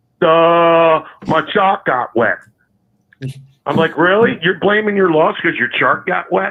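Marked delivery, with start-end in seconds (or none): 0.2-2.4 put-on very slow, silly New York accent, "my" stretched out. Retelling a press conference excuse after a loss to the Cowboys, mocking Kotite's New York accent. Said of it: "in his stupid little New York accent".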